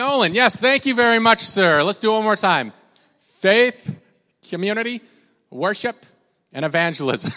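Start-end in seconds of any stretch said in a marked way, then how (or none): 3.4-7.3 put-on New Jersey accent. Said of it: "in your best Jersey accent".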